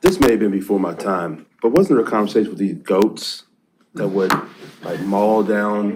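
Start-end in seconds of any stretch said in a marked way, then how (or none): 5.0-6.0 "maul down" said oddly, slowly, and drawn out. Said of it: "Why do you have to say it like that?".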